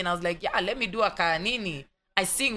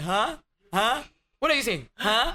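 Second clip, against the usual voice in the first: baffled, confused "huh"; 3 semitones higher than usual. Retelling how people abroad reacted to her English: imitating confused people. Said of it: "And guys are just like".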